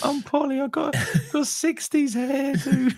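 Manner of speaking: put-on impression of a woman's voice. Speaker introduces themself as Polly, in a Polly woman's voice. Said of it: "an impeccable impression of just a woman... just a woman's voice".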